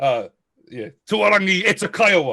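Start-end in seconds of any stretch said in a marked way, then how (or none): 1.1-2.3 loud high-pitched shout. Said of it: "like that".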